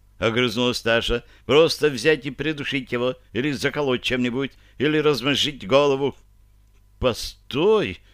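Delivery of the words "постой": begging, imploring, pleading tone. [name] interrupts his younger sister Tasha, pleading. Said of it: "взмолился изрядно посеревший".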